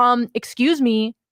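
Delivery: put-on upset voice. Young cashier retelling a customer confronting them in line, imitating an upset customer. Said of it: "She was so upset".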